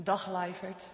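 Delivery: put-on childlike Groningen accent.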